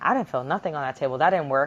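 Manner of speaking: ordinary talk, nothing marked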